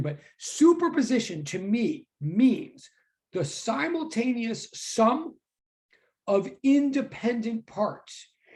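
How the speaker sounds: slow, deliberate, drawn-out delivery. Repeating a definition so listeners can put it in their notes, slower. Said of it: "Let me say that slower".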